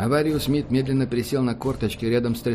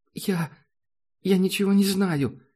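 trembling, shaky voice, much higher pitch; 7 semitones higher than usual. Narrator reading a young woman's reply to a security officer, trembling voice. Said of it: "дрожащим голосом откликнулась девушка".

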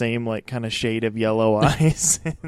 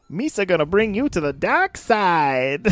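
high-pitched voice with the word side drawn out; 7 semitones higher than usual. Joking about Darth Jar Jar leading Kylo Ren: Jar Jar voice. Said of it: "Darth Jar Jar".

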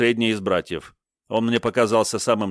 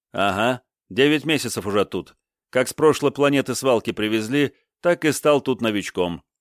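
ordinary delivery

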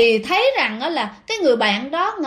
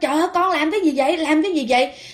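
high, rushed alarmed cry. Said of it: "mới la lên".

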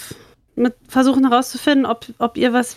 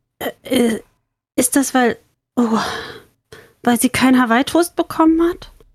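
halting stutter, higher in pitch. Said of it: "sie stottert".

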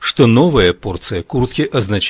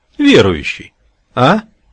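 raised, taunting, derisive, mocking tone; 4 semitones higher, 5 dB louder than usual. The warden answers the narrator's confident offer: mocking question. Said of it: "насмешливо спросил он".

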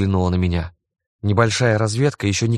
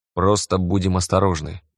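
plain reading voice

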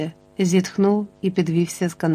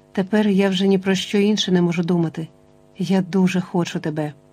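plain reading voice

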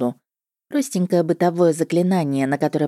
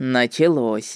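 mocking, offhand, tossed off, much lower pitch; 4 semitones lower than usual. A man, nervously told to sit at the table, tosses off a remark, mocking. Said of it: "насмешливо бросил он".

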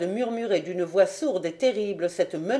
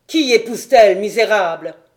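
booming, thundering, very loud roar; 10 dB louder than usual. Full of jealousy at news of Clara's marriage, he cries out, thundering voice. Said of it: "il s'écria d'une voix tonnante".

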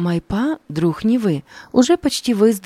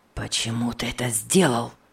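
hissed through clenched teeth, much lower and quieter; 7 semitones lower, 6 dB quieter than usual. A narrator reads a character confronting his brother, hissed through clenched teeth. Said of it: "прошипел он, стиснув зубы".

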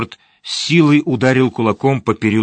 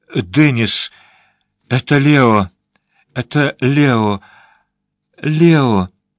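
near-hysterical cry, voice on the edge; 2 semitones higher than usual. A woman, caught in a man's arms, cries out names, near hysteria. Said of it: "В ее голосе звучала близкая истерика".

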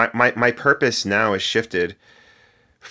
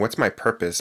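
plain

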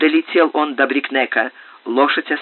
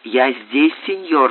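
soft, quiet voice. Bembo, leading out a saddled horse for Rio-Santo, speaks quietly. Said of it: "тихо сказал Бембо".

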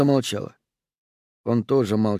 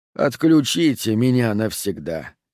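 ordinary delivery

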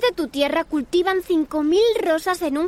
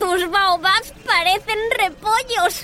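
spoken through a laugh, laughing. Reading a story: the little prince looks at the narrator's drawings and speaks, laughing. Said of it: "dijo riendo".

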